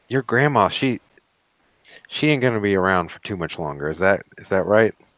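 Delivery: quick stage whisper. Player leans over to Allison to talk about his price, half-whispering. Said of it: "lean over and whisper like".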